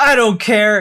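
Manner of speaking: mock angry yell, loud. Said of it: "I'm yelling at you to prove".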